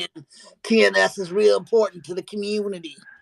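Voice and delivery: put-on New Jersey man's accent. Demonstrating the voice they could have used for Kaiser, New Jersey guy accent. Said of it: "the New Jersey guy".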